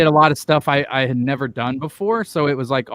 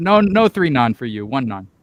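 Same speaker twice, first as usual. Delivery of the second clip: put-on flat deadpan delivery. Retelling how a man refused more nons for Jacob, retelling a deadpan reply. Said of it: "the guy deadpan looks at him and goes".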